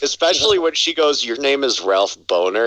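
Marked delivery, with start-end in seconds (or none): none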